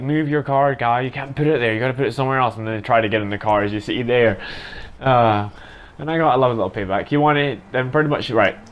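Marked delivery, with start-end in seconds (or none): none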